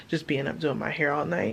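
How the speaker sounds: ordinary talk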